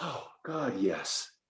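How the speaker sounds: soft, hushed delight, breathed out. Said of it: "the voice of enthusiasm says".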